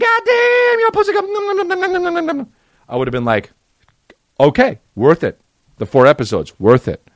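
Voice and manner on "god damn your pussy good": very high squeaky squeal, very slow, stretched-out "good". Imagining a scene where Chris Tucker says the line: Chris Tucker impression. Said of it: "Chris Tucker went like this".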